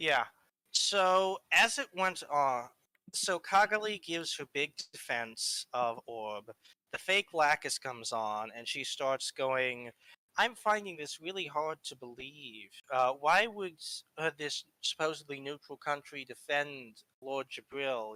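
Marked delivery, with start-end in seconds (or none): 10.4-18.1 put-on, very manipulative, leading tone. Retelling a fake Lacus questioning a neutral country: imitating a manipulative tone. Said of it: "talking in this very manipulative, like, tone".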